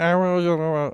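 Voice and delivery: put-on high-pitched, hesitant voice. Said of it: "That's my Lucas impression".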